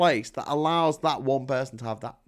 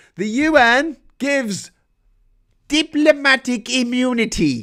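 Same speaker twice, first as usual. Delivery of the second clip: terrible put-on South African accent, raised, slow, drawn out; 9 semitones higher, 5 dB louder than usual. Explaining how the u n makes things worse: terrible south african accent. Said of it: "that's a terrible South African accent".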